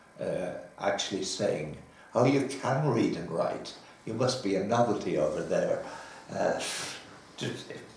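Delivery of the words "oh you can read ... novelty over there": ordinary talk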